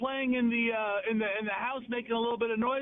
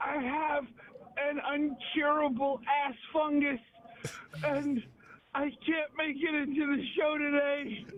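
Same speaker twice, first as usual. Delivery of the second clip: put-on crotchety old man voice, sounding suffering; 4 semitones higher than usual. Playing Fester, saying he can't make it to the show, crotchety old man voice. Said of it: "crotchety old man sound".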